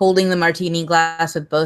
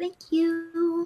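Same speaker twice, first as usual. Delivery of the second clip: put-on high girly squeal, higher and quieter; 12 semitones higher, 7 dB quieter than usual. Voicing a character whose drink finally arrives: girly squeal. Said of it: "the girliest of squeals".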